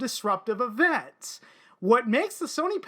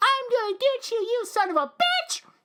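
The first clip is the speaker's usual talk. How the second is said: put-on very high, squeaky pipsqueak kid voice; 11 semitones higher than usual. Speaker retells a young-sounding opponent he kept beating, in a squeaky pipsqueak voice. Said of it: "he had like that real pipsqueak voice".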